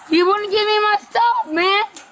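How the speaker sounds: aggrieved, angry, heated complaining tone. In a heated exchange, one speaker turns on another: angry yelling. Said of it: "why are you yelling at me?".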